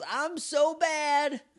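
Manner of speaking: mock shrill, boastful, gloating yell, very high. Retelling a scene from an episode: imitating Rita yelling. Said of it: "Rita just yells".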